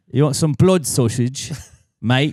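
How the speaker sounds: put-on faux English accent. Joking with another speaker about a british food account, in a faux english accent. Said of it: "It's a faux English".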